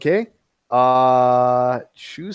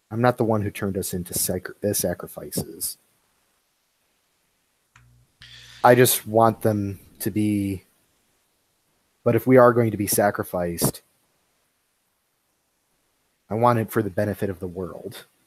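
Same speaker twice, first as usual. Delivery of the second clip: very softly spoken, low, almost murmured; 5 semitones lower, 5 dB quieter than usual. In a role-play, the speaker voices their character's reply, very quiet and soft. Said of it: "very quiet and very softly says".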